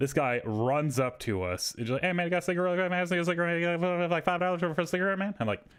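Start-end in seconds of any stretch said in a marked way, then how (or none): 2.0-5.3 high-pitched, rapid, rattled-off fast talk. Retelling a man who ran up to the speaker's group: fast-talking crackhead impression. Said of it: "and immediately fast talking".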